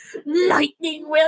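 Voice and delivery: words let out as a sudden yelp. Speaker mimics how the other person yelps the phrase, imitating a yelp. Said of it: "That's how you just like yelp".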